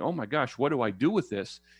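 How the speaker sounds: ordinary delivery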